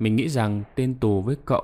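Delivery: ordinary delivery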